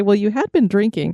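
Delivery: ordinary talk, nothing marked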